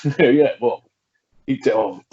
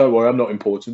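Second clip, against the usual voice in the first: usual speaking voice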